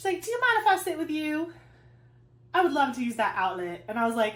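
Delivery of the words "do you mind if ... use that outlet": put-on high, cute Southern accent. Retelling what a woman asked at the speaker's table, cute Southern accent. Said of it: "she's got this like cute southern accent".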